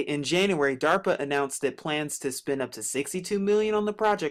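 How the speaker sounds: ordinary talk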